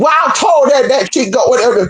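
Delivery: put-on backwoods hillbilly accent. Telling a story about relatives and acting out what was said in an exchange, imitating a hillbilly accent. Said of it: "They talk just like that girl".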